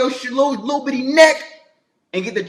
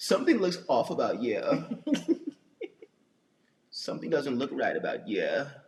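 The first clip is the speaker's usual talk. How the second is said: very low, very soft, deep voice that swoops; 12 semitones lower, 14 dB quieter than usual. Doing his impression of his woman's voice: imitating Chanel T's voice. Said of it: "that's my impression".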